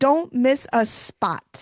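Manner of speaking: emphatic, pointed stress on every single word. Retelling what Amy said about spraying the vines: imitating Amy emphasizing. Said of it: "And she emphasized".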